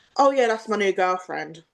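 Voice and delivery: ordinary delivery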